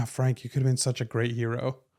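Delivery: grave, earnest hero voice, quickly delivered. Describing a game's character dialogue, quoting a line while imitating solemn Spider-Man. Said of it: "in like this kind of solemn type voice".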